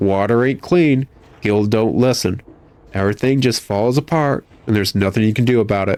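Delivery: plain reading voice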